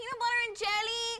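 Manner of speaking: imitated, mock Miami accent. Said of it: "she had the Miami accent, and so she talked like this".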